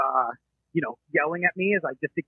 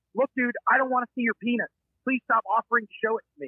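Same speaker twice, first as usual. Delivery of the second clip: play-acted, raised, high-pitched shouted yell; 8 semitones higher than usual. Retelling yelling back at a man screaming profanity, retelling a yell. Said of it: "my response is to just yell back".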